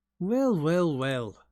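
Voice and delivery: patronizing tone. A newcomer finds two failed prison escapees, condescending. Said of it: "That condescending tone".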